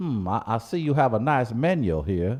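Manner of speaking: slow, put-on Louisiana drawl. Showing how to order food: put-on Louisiana accent. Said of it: "That was my Louisiana accent".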